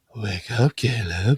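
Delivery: mock alluring, seductive, coaxing come-hither voice. Retelling how a show character wakes Caleb: imitating a seductive voice. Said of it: "way more, like, seductive".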